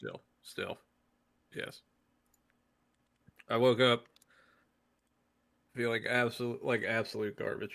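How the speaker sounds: voice sounding sick and ill. Answering after being introduced to the chat: sick voice. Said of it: "I'm sick".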